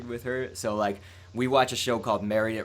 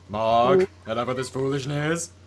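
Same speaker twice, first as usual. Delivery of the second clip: put-on cartoon alien voice; 3 semitones higher, 6 dB louder than usual. Speaker quotes a cartoon line to co-hosts, in a Fairly OddParents alien voice. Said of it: "That that is a direct quote from Fairly Odd Parents".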